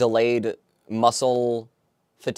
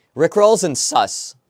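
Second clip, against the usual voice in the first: loud, pitched-up, cracking voice; 6 semitones higher, 5 dB louder than usual. Speaker listing what they want to keep track of: voice cracking. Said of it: "my voice cracked".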